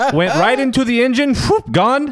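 clumsy, terrible put-on Swiss accent, very high pitch. Retelling what a man said about the flight delay, in a terrible Swiss accent. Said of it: "I'm about to do a terrible Swiss accent".

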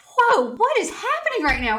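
very high, swooping voice on the verge of tears. Thanking Rachel for sharing her story, and suddenly about to cry. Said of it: "I'm about to cry".

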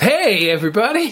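very high-pitched animated cartoon character voice. Picturing a river of blood as a main character: Disney animated character voice. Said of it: "They're like a Disney, you know, animated".

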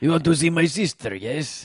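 bad Mexican accent drifting into Russian. Retelling what a Mexican guy said to him and another guy, bad Mexican accent sounding Russian. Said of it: "That sounded Russian".

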